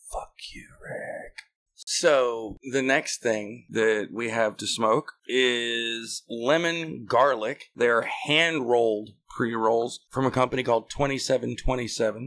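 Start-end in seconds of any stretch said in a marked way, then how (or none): 0.1-1.3 whispered, very quiet, barely audible. Saying a line after being asked to whisper it: whispering. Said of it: "just whisper".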